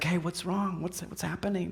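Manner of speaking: very quiet, hushed half-whisper. Picturing a wedding scene, asking quietly what's wrong: imitating a hushed voice. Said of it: "in hushed voices".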